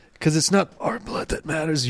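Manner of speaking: smooth, soft, tearful, emotional dramatic delivery. Showing how to deliver the line better: emotional, quiet delivery. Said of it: "And you got to get emotional".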